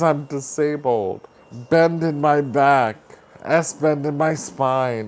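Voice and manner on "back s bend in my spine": ordinary talk, nothing marked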